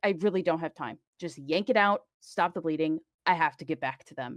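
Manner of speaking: insistent, pushy, dismissive tone. Recounting a game scene, you give one character's reply to another, retelling it as pushy. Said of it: "she's a little bit panicked".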